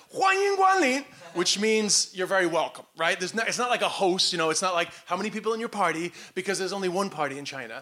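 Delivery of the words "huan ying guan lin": put-on, very high-pitched, yelled-out shout. Former welcomer reenacting greeting arriving customers at the door, retelling a welcome shout. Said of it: "I would shout at them".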